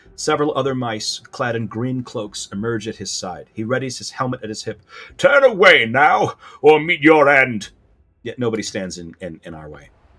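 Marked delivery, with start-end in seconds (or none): 5.2-7.7 booming, resounding voice, louder, higher, slower. Narrating a tabletop scene, a mouse of the Order warns the party off, booming voice. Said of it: "here's a booming voice".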